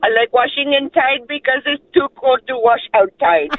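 put-on Indian accent. Telling a joke on a radio call, woman's punchline in Indian accent. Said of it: "for the Indian accent alone".

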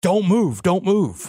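high, drawn-out, full-lunged screaming. Retelling a cop standing over him after a flashbang, imitating a cop screaming. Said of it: "he's screaming at the top of his lungs".

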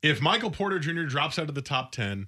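mock yell. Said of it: "that's why I yelled it".

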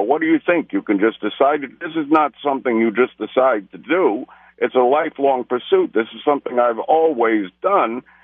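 ordinary talk, nothing marked

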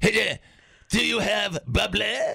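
terrible put-on French accent. Imagining a Frenchman who comes to Wisconsin, bad French accent. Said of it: "in a French accent".

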